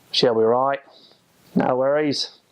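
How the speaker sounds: everyday, casual Australian accent, nasal. Speaker demonstrating basic aussie phrases, in an australian accent. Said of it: "Those are some of the basic Aussie things".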